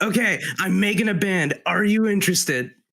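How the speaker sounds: blasting, high-pitched shout in character voice. Playing a character who blasts through a door, in-character shout. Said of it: "He blasts through the door and just shouts".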